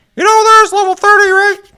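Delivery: shrill, very high, very loud put-on caricature voice. Retelling what Josh said while doing his voice: Josh impression. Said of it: "this is my best impression of him".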